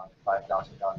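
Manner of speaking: low, flat, detached, dead-level monotone. Demonstrating an affirmation technique someone described, spoken in real monotone. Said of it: "just real monotone".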